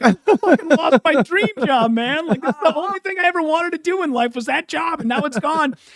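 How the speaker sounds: mock, very high voice, fighting back tears. Retelling trick-or-treating after losing a dream job: imitating holding back tears. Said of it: "trying to hold back tears".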